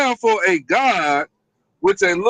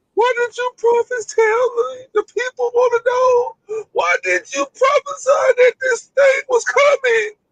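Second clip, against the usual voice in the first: very high, crybaby blubbering, sobbing whine. Mocking a crybaby who complained about his prophets, in mock crying. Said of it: "That's how you crying".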